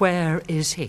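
plain

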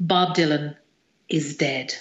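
deep, slow, grave and solemn delivery. Retelling what a brother said while holding her hand: imitating brother speaking deeply. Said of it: "really deeply".

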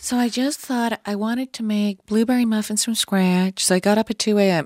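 affected dull monotone. Demonstrating the unnatural voice some people put on, affected monotone. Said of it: "That type of mono".

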